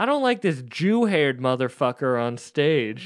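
mock, sort-of yelled, heckling voice. Retelling what a man in the crowd yelled to Al: imitating a heckler yelling. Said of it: "he kinda yells".

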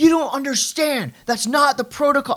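very high-pitched yelling. Speaker imitates a guy by the counter staring into his iPad, imitating a man yelling. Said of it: "he's yelling business stuff".

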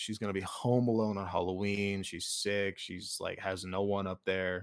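ordinary talk, nothing marked

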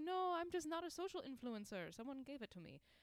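high, horrible, fake put-on German accent. Retelling a German woman's reply to their message: horrible German accent. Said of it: "That was a horrible German accent".

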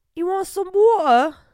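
very high, booming, shrill fake British accent. Showing off the british accent he claims to be good at: imitated british accent. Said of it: "I just talk British. I'm pretty good at it. ... That's how they say water".

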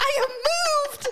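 high, slow, passionate grand stage-speech delivery.

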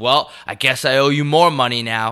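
fed-up, annoyed, frustrated tone. Retelling a customer complaining about spending money: imitating a frustrated customer. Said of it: "getting visibly frustrated".

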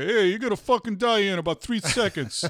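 put-on New York accent. Suggesting a replacement for the pleasant countdown voice in movies, do a put-on New Yorker voice. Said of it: "I'd have like you know some New Yorker".

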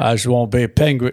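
bad put-on Liverpool accent. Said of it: "that's a terrible [name] voice".

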